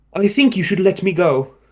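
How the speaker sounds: put-on British accent, pitched high. Recalling who he played, the speaker voices Zane in a British accent. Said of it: "I gave him a British accent".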